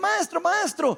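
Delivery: urgent, high, slow, drawn-out calling out.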